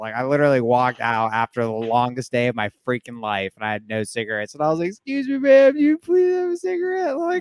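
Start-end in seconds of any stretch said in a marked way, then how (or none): 4.9-7.2 put-on very high pleading voice close to tears. Retelling asking a lady for a cigarette: retelling an almost tearful plea. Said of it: "almost in tears".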